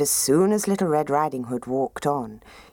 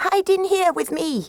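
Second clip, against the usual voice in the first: very high, urgent calling out; 4 dB louder than usual. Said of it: "called Granny".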